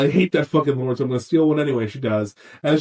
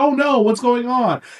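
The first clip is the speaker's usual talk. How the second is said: put-on, very high, frightened cry; 10 semitones higher than usual. Retelling a TV scene where Hodor gets scared: scared Hodor impression. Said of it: "'cause he was, like, scared".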